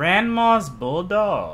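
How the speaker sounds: slow, swooping, weirdly drawn-out delivery, each word stretched.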